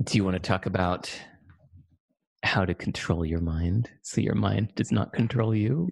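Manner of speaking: sinister, creepy movie-villain voice. Asking the other speaker where to go next, in a creepy voice. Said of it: "You said it in such a creepy voice".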